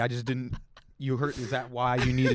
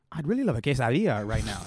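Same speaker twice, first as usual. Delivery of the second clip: heavy, overdone, put-on Spanish accent. Speaker imitates people who show off their accent when ordering food, mocking an overdone heavy accent. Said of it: "I don't need you to do the accent that heavy".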